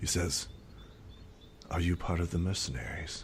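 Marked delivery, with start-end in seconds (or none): 1.7-3.2 low, quick, hushed half-whisper. Voicing an elf asking a player's character a question, half-whispering. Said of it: "whispers to you".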